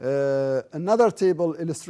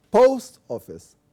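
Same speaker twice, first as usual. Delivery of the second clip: post heavily stressed over office; 5 semitones higher, 6 dB louder than usual. Pronunciation exercise on compound-noun stress: stress on post. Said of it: "we give more emphasis to post than office".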